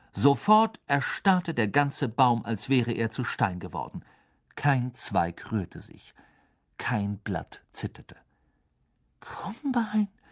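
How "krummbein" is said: suspicious whisper, much higher pitch. Seeing a cat make a tree freeze, clutching a friend's arm; suspicious whisper. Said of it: "flüsterte Hermine argwöhnisch".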